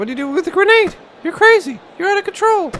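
squeaky, very high-pitched voice. Retelling own reaction to finding a grenade: imitating own voice getting high-pitched. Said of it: "Just my voice getting more high pitched".

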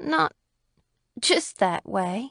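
muffled, muted voice. Narrator reading a woman's reply as she turns away, muffled voice. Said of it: "her voice was muffled".

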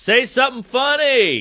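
high-pitched hollering yell. Speaker retells a guy in a big audience heckling, retelling a heckler's yell. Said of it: "yells out".

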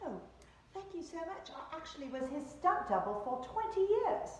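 very poor put-on British accent. Retelling a man's reply after the speaker compared his looks to a celebrity, bad British accent. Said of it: "Worst British accent ever".

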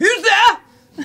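shrill, very high, very loud barkeep shout. Voicing the barkeep calling out after a knock: barkeep voice. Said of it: "you hear from the barkeep".

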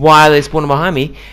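frustrated yelling. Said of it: "yelling at yourself".

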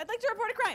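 shouting. A caller reporting a crime to the county police, yelling. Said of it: "you don't have to yell".

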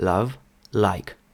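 British soft L in love, like. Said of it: "Вони завжди вимовляють звук Л, Л досить м'яко".

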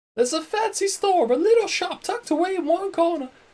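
put-on accidental posh British accent creeping in. Speaker narrating a walk, slipping into an accidental posh British accent. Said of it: "It's not a posh British I'm going for".

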